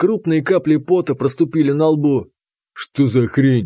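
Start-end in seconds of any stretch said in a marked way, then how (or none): 2.7-3.7 annoyed, demanding, angry tone. A man holding a pistol questions a sweating storekeeper, angry question. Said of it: "сердито спросил Заур".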